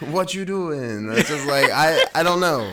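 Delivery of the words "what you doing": pitched-up put-on Mexican accent. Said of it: "You always do Mexican".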